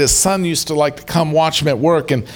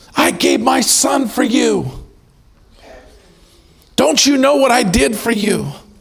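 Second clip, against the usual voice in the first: high, anguished, frustrated screaming; 8 semitones higher than usual. Retelling a sermon story, a father screaming at train passengers: screaming in frustration. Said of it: "he's screaming".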